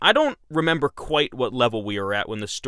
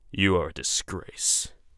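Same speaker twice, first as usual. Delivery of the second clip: put-on old man's deep, low, stern voice; 6 semitones lower, 4 dB quieter than usual. Narrator reading a man's words as he looks Vinberger up and down, old, deep voice. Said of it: "saying in an old, deep voice".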